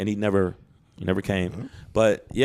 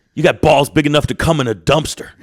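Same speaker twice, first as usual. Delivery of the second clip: put-on grumpy voice, higher and louder; 5 semitones higher, 10 dB louder than usual. Retelling what a comedian said after a show: imitating a grumpy George Carlin. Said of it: "He was grumpy".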